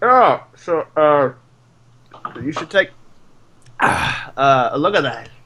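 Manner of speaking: speaking through a mouthful while chewing. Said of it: "with like a mouthful of like I guess eggs or whatever".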